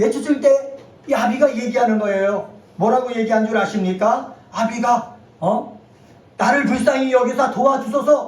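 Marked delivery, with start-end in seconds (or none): 6.4-8.3 high, loud, desperate pleading voice. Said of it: "간청하는 거예요".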